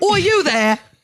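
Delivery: put-on blunt, high British accent. Retelling a stranger's question on a train, the speaker imitates a British man's accent. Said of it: "He was more polite than that".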